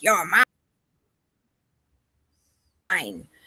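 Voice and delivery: nasty, scratchy, put-on demonic rasp. Recounting a voice heard while trying to bless a home, scratchy demonic voice. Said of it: "scratchy, nasty, kind of demonic voice".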